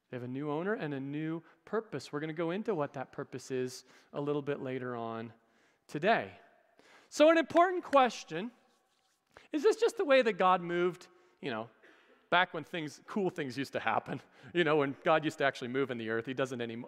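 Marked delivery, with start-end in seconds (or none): 12.3-16.8 dry, sarcastic, tongue-in-cheek, mock-sincere tone. Asking the congregation whether god still moves today: sarcastic. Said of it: "That's sarcasm".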